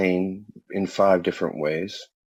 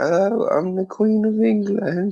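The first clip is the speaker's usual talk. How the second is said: very high, slow, grand voice; 12 semitones higher than usual. Mocking how she introduces herself, imitating the Queen of England. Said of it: "she'll stand up and she'll go".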